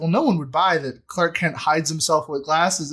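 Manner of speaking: ordinary talk, nothing marked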